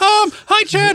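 very high, silly put-on voice. Doing a requested voice to greet Chad: the Bear voice. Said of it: "do the Bear voice".

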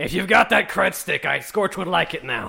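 loud, creaky, rough, rasping, brutal orc voice. A game player speaking as the orc to the butler: Scorch's orc voice. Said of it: "the orc's voice".

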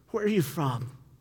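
put-on pure fear, voice trembling and quavering. Imagining Pilate asking a question: put-on fear as Pilate. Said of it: "Not the anger, not the animosity that he had there, but just pure fear".

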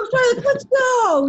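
very high, loud, bossy, bullying shout. Retelling urging a slow teammate on: imitating someone yelling. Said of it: "yelling at him".

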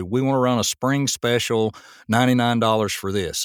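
ordinary delivery

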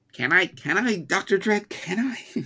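very high-pitched, slow, creepy voice. Imitating Toad begging Doctor Dredd: higher-pitched Peter Lorre impression. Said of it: "Toad is a higher-pitched Peter Lorre impression".

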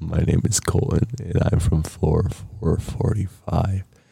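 deep, creaky, low and rough voice. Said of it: "doing it the same way as [name]".

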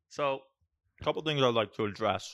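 speaking while chewing. Eating sour punch straws, the speaker moves on, talking with mouth full. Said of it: "With my mouth full".

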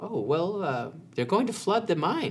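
meek goblin voice, high, squeaky, wide-ranging pitch.

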